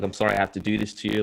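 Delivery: put-on crying. Retelling hugging her goodbye while weeping: retelling own weeping goodbye. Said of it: "just weeping, crying".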